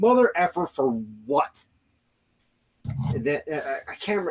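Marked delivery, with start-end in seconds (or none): 0.0-1.6 furious angry outburst, losing it, swooping pitch. Retelling being arrested by an officer, retelling an angry outburst. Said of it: "and I lost it".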